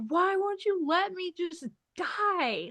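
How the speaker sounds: put-on tearful crying, high furious angry yell. Recalling sitting on the bathroom floor, trapped and cut off, retelling a tearful yell. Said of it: "crying my eyes out, yelling".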